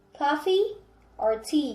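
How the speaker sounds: rising pitch on coffee, falling pitch on tea. Example of an or-question: rising on coffee, falling on tea. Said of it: "Coffee is rising, tea is falling".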